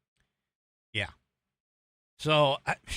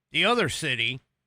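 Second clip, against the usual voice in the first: ordinary delivery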